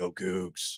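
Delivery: rough, raspy voice of a heavy smoker. Fulfilling a request, speaker says a short cheer in a smoker voice. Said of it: "I need to hear a 'Go Cougs' in a Smoker voice".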